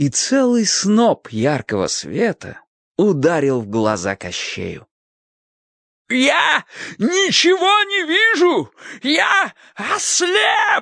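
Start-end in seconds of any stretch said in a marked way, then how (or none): 6.1-10.8 very high, drawn-out crying out. Narrator reading a character's cry as bright light hits his eyes, crying out. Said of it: "закричал Кощей Бессмертный".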